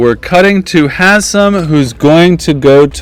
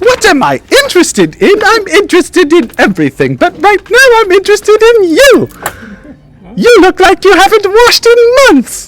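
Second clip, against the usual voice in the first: very high fairy character voice. Voicing the High Seat greeting a player: Toaster Fairy voice from Scrooged. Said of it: "not unlike the Toaster Fairy from".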